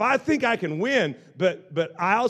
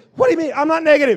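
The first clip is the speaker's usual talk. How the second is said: high, very loud crybaby whine, defensive; 9 semitones higher, 9 dB louder than usual. Retelling how Todd answers when called negative: imitating Todd, defensive. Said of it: "goes into this defensive mode like a crying little girl".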